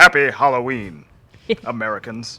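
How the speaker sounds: very deep bird-puppet character voice. After others suggest it, doing a quick Sam the Eagle voice. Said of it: "Sam the Eagle says".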